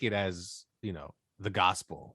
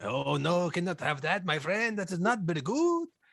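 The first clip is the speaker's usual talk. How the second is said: pitched-up, put-on Mexican accent in English; 9 semitones higher than usual. Answering how Mexicans talk, with a put-on Mexican accent. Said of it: "How do Mexicans talk?".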